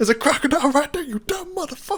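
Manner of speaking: mock screeching yell, very high-pitched and shrill. Speaker acts out what he'd scream down at people in the water: mock yelling. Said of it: "that's the first thing I would be yelling".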